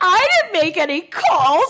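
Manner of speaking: very high voice, fighting back laughter. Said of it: "trying to stifle his laughter".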